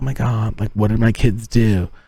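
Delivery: put-on newscaster-style on-air reporter voice. Speaker recalls her mom reacting to what her kids did, in mom's put-on reporter voice. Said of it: "she did like her reporter voice".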